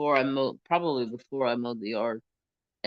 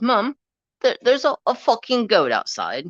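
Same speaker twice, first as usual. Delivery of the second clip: put-on shrill, very high, loud little British boy voice; 10 semitones higher, 9 dB louder than usual. Retelling a little boy telling his mum something, in a little British boy voice. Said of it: "he's a little like U K British boy".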